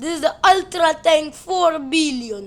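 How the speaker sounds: Soviet-style accent. Counting tanks in a pile, the speaker slips into a put-on Soviet accent. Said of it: "I don't know why I'm talking in like a Soviet accent".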